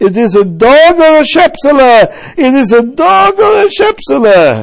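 piercing, booming, very loud, high, rising, drawn-out scream. Retelling a story in which a character drags a box: retelling a scream. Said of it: "and he's screaming".

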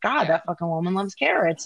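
usual speaking voice

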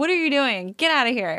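put-on yelling. Retelling a character ordering Jean away: imitating Barry yelling at his dad. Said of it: "yelling at his old dad".

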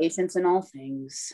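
very low, deep muttered mumble, barely out. The narrator voices a man mumbling his reply as she leaves. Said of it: "He mumbles back".

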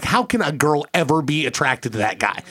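ordinary delivery

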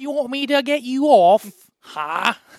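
put-on very high, loud, slow Victorian child voice.

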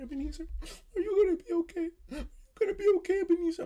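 very high bawling through tears. After hugging his family, the speaker quotes his mom's words: imitating mom bawling. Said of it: "my mom just starts bawling".

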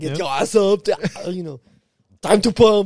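put-on aggressive bodybuilder voice. Imitating a Monday Motivation episode wake-up line: Arnold Schwarzenegger impression. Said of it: "if Arnold said it".

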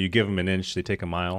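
ordinary delivery

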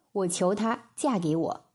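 ordinary delivery

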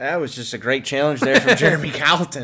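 heavily sarcastic, swooping delivery. Commenting on a coach's failed goal challenge: sarcastic. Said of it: "if you can't sense the sarcasm".

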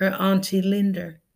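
plain

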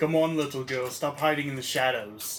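put-on Austrian accent in an action-hero voice. Calling to someone hiding in the shadows: faux Arnold Schwarzenegger voice. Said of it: "Sound like a faux Arnold Schwarzenegger".

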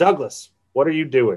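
ordinary delivery

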